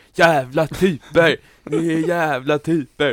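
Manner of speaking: very loud, high, very slow drawn-out screaming. Describing someone lying in a hectic hospital on a Saturday night, retelling a scream. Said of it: "Det var någon som låg och skrek bara".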